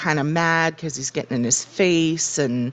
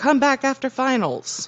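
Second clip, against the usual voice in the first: play-acted raised, high-pitched called-out yell; 9 semitones higher than usual. Recounting her reaction to a knock on the door, retelling a yell at the door. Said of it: "just yells at the door".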